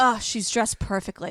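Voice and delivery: low under-breath mutter. Recapping something watched, quoting a man's remark on seeing a woman: retelling an under-breath remark. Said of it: "he just says under his breath".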